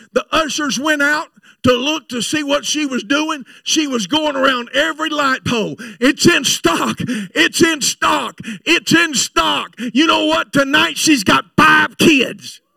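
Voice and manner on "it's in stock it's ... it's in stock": slow, deliberate, repeated screaming call. Retelling a woman running down the aisle: imitating her screaming. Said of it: "She hit them back doors screaming".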